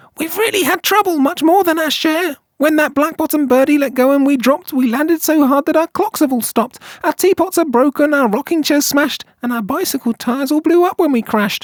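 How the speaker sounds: small, barely audible, very high voice. Narrator reads the mayor calling up from the speck to the elephant, faint and tiny. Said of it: "but I'm mayor of a town that is friendly and clean. / The voice was so faint he could just barely hear it".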